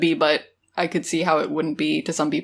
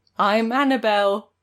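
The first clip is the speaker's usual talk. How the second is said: put-on British accent, higher; 4 semitones higher than usual. Retelling a character's fake British claim: Peppa Pig voice. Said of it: "You sound like Peppa Pig".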